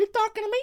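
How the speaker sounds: put-on squeaky, shrill toddler voice acting tough. Shout-out to his cousin, doing a baby Robert De Niro impression. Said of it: "I once did an impression of a baby Italian Robert De Niro".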